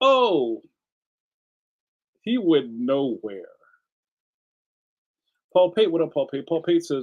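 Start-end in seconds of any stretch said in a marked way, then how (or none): 0.0-3.5 drawn out with wide pitch swings. Retelling a football video game's repeated line: imitating the Joe Montana Sports Talk Football announcer. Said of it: "the announcer guy would say the same thing".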